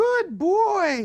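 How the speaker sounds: squeaky, very high, silly voice. Demonstrating praising a dog for sitting, silly high-pitched voice. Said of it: "praising in a silly high-pitched tone of voice".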